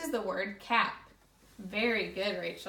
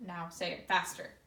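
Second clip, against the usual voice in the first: ordinary talk, nothing marked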